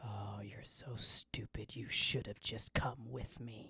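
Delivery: low, hushed whisper, close to the ear. Narrating a game scene, the speaker voices a woman whispering in the player's ear. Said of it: "whispers in your ear".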